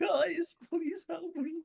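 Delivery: mock-despairing plea. Retelling his own earlier call to the guys, mock-despairing plea. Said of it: "You can hear the despair in my voice".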